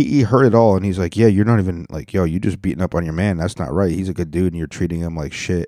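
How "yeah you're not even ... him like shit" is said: plain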